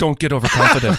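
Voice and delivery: fake robotic AI voice. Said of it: "Spock from the J J Abrams movies doing the voice of Stem".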